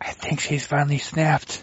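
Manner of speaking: hushed whisper. During a roleplaying game, whispering an aside to another player. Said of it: "I whisper to Sal".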